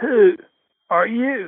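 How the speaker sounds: high, sputtering voice out the corner of the mouth. A hospital patient speaks to the emergency physician, sputtering. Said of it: "He sputters out".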